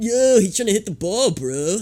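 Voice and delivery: put-on way of talking. Retelling how friends talked, imitating their shared accent. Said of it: "they had an accent that they did".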